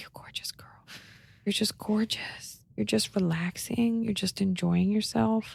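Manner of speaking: tender, soft, sweet, hushed murmur. Retelling what they say in their morning conversations; whispering.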